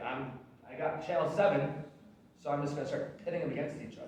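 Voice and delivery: ordinary talk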